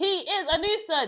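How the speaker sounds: sudden, loud, high-pitched shouted outburst. Describing a man who campaigned to be a nuisance, the speaker is shouting. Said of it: "sorry for shouting".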